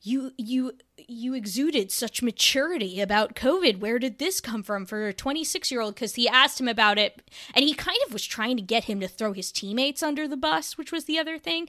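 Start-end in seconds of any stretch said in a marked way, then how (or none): 0.0-6.0 mocking, condescending put-on tone. Retelling a reporter's question to a player: imitating a condescending question. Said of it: "in, like, a really condescending way".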